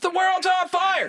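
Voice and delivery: very high-pitched, drawn-out, panicked yelling. Joking about calm emergency dispatchers, playing the caller, mock-panicked yelling caller. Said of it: "would you please stop okay. yelling?".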